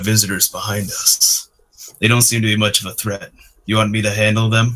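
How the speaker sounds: unsettling, creepy delivery. Narrator voicing a character talking to somebody else, creepy tone. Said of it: "a very creepy tone".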